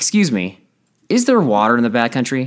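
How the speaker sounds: put-on almost aggressive tone. Retelling a group member asking a ranger at the desk, almost aggressively. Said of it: "he just almost aggressively".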